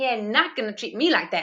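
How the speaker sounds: sliding into a put-on American accent. Feeling like being on Jerry Springer, slipping into an American accent. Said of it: "I always go into an American accent".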